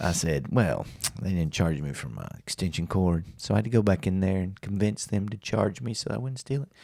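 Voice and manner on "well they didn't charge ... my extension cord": play-acted tone dripping with self-satisfaction. Retelling answering a buddy who asked what took so long: imitating own smug tone. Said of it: "And very smugly".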